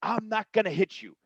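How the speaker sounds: shrill, very high, insistent screaming. Telling a story about a tense confrontation, quoting the other man's reply: retelling a scream. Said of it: "He's he's screaming".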